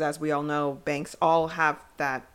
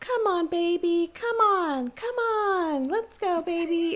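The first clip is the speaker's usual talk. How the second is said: put-on little kid voice, much higher pitch, slower. Speaker imitates a woman talking into a walkie-talkie outside a bank, little kid voice. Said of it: "your little kid voice".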